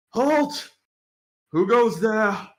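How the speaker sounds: loud, high sentry's shout. Game master voicing a guard as the travelers approach, shouting out. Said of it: "he notices you and just shouts out".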